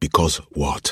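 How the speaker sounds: usual speaking voice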